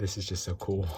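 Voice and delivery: breathing heavily. Watching a mantis eat a roach up close: heavy breathing. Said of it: "Excuse my heavy breathing".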